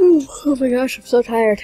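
talking through a yawn. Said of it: "I'm just yawning a lot".

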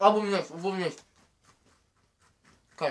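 talking with mouth full, muffled. During a Cheerios-stuffing challenge, speaker talks with mouth full. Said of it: "stop making me talk".

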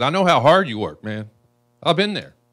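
very loud, on the verge of tears. Speaking to a business owner who was shut down: almost crying. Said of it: "I'm almost crying right now as it is".

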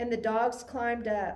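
ordinary delivery

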